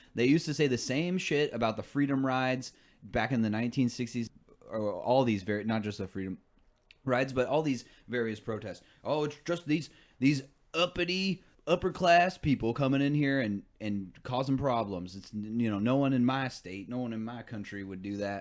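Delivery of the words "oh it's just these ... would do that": put-on Deep South American accent. Mocking what people said about the sixties protests, in a southern accent. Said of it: "I shouldn't just use a southern accent all the time".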